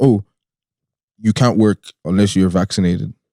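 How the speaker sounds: ordinary delivery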